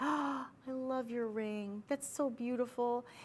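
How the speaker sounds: awed, admiring voice, pitched high. Acting out someone admiring a ring: imitating an admiring compliment. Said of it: "and you say it in that voice".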